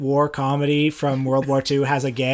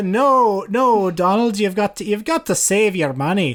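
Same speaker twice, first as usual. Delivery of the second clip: put-on higher-pitched Scottish accent. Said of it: "Is that how you do a Scottish accent?".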